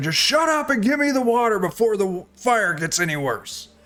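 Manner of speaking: yelled in a put-on voice. Voicing Moosin yelling for the water during a fire: Moosin yelling. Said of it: "And Moosin yells out".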